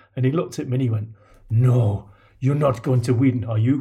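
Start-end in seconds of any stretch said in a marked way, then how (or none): 1.5-3.9 put-on loud, unmistakable, obvious Italian accent. Replying while running back to the halfway line: Gianfranco impression, Italian accent. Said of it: "This is my obviously Italian accent".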